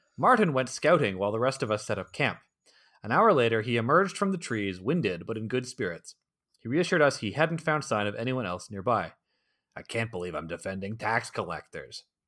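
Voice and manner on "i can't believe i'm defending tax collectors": low, disgusted mutter, grumbling to himself. Reading a story, one of the group at camp complains, muttering disgustedly. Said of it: "Dayton muttered disgustedly".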